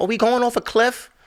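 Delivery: put-on frantic, panicked woman screaming. Retelling a car skidding on ice, mocking the screaming; imitating a screaming woman. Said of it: "Women always screaming".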